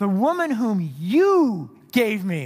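heavy weight on you. Interpreting a scripture line about the woman, stress on you. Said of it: "I think the emphasis is on you".

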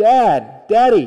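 put-on loud, high-pitched child voice yelling.

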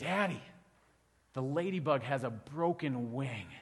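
slow, awed delivery, full of awe. Retelling what a five-year-old daughter said to her dad: imitating a child's awe. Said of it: "she said it with that much awe".

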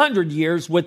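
ordinary delivery

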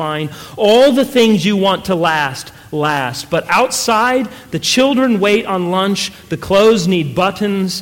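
ordinary delivery

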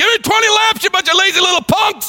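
play-acted shrill, very high coach's bark. Retelling what a lazy coach on a stool yells: imitating a coach yelling. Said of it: "And then he's yelling at us".

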